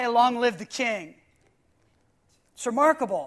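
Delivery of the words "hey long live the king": plain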